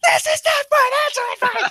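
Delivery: very high, shrill, frantic yelling. Describing a man held down in the back of a plane: retelling a yell. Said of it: "and he's yelling".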